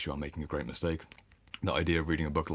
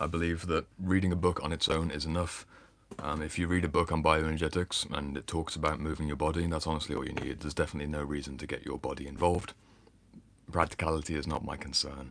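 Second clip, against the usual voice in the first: usual speaking voice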